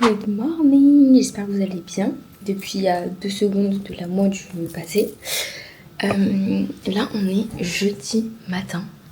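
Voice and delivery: hushed, very quiet half-whispered chatter. Speaker greets viewers on Thursday morning while her sister still sleeps, half-whispering. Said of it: "je chuchote car il y a encore ma soeur qui dort".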